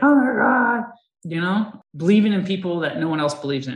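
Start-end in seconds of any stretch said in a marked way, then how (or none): 0.0-0.8 loud, high crying out in tears. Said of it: "crying and stuff because he's like".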